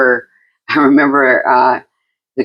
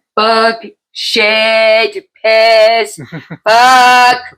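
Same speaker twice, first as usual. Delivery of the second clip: put-on very high, slow, drunken, "shit" stretched out; 10 semitones higher, 3 dB louder than usual. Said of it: "I got totally drunk".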